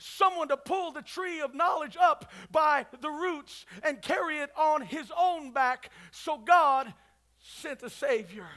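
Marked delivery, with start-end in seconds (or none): none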